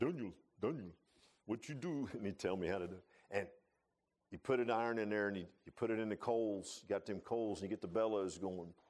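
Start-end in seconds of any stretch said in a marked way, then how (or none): 0.0-2.1 put-on German accent, old man voice. Quoting an old man who taught him forge welding, imitating a German accent. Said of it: "he would talk with that German accent".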